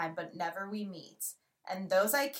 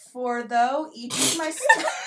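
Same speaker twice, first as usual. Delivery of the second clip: words dissolving into laughter midword; 4 semitones higher, 4 dB louder than usual. Trying to read a poem line aloud: laughing while reading. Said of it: "I can't even say a word".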